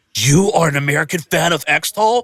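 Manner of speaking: acted, thrilled, gushing, eager excitement. Retelling meeting Extol's guitar player, imitating an excited man. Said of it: "he's shaking me excitedly".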